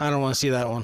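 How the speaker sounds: acted-out deadpan, dry, unbothered, low and flat. Retelling what she said during a movie preview, imitating a deadpan delivery. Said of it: "she looked at me deadpan".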